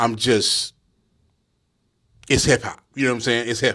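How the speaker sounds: emotional, close to tears. Speaker talking about a Rock Marcy project, choked up. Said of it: "I'm not crying".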